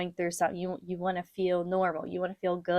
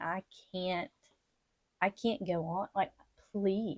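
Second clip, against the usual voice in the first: crying, begging tone, quieter; 5 dB quieter than usual. Retelling praying before the doctor's call: retelling own crying plea. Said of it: "begging God and just, like, really crying out to God".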